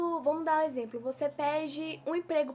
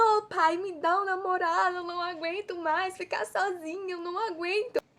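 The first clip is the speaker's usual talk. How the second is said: weepy, tearful, crying, begging tone; 4 semitones higher than usual. Acting out a single woman crying to god for a boyfriend; imitating crying while pleading. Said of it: "Aí eu fico chorando".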